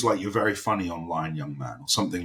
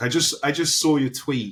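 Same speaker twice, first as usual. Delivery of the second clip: terrible put-on American accent, loud and high; 7 semitones higher, 5 dB louder than usual. Recalling how he would single you out at group scenes, imitating Mark in a terrible American accent. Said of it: "terrible American accent I'm doing".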